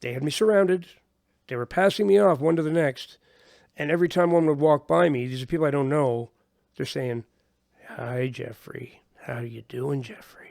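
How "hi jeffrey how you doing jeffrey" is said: eerie, creepy voice, very soft, hushed and drawn out. Retelling how surrounding strangers greeted the speaker, imitating creepy voices. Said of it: "Just like in creepy voices".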